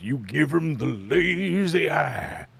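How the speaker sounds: very slow, stretched-out, lazy movie-star voice. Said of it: "Jimmy Stewart talks like this".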